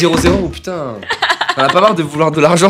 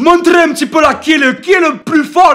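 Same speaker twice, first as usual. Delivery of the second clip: high, loud, mock-manly, macho shout. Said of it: "je devais prendre une voix, euh, virile".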